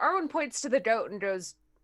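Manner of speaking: ordinary talk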